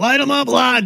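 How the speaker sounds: loud, high screaming delivery.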